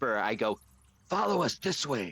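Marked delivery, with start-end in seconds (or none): 1.1-2.1 loud stage whisper, much higher. A player in a role-play game speaking as their character, in a loud whisper. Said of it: "In a loud whisper".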